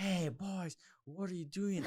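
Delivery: put-on high-pitched yelling. Retelling how a girl yelled after they hopped a fence: imitating a girl yelling. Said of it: "there's some girl yelling".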